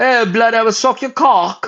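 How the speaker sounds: put-on British accent, pitched very high. Mocking someone's weird accent, in an imitated british accent. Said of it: "And it's not a very hot accent".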